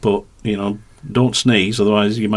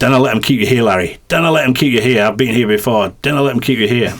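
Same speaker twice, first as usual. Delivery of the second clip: put-on Scottish accent; 2 semitones higher, 3 dB louder than usual. Speaker, on a stretcher in A and E, retells what was said; Scottish accent. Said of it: "excuse my Scottish accent".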